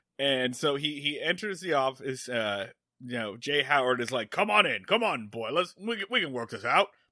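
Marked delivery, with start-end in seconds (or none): 4.3-6.9 big cartoon rooster voice. Retelling what a character says on entering the office: Foghorn Leghorn voice. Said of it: "Apparently he's Foghorn Leghorn".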